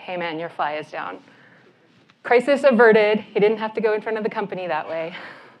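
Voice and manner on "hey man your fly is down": hushed, soft, low-key, quiet voice. Retelling leaning in to tell a colleague about his fly: retelling a quiet aside. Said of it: "I kinda lean in and quietly say".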